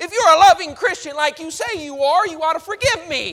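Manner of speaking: loud, high, flippant and careless.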